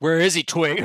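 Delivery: abrupt shift to bad-cop tone. Questioning twig about where a man is, the speaker shifts: sudden bad-cop tone. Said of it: "Oh shit! The tone changed".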